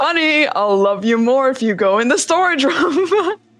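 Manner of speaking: voice of an animated TV father. Recounting a player's attempt to open a storage room: Powerpuff Girls dad impression. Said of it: "tries to do an impression of the Powerpuff Girls dad and goes".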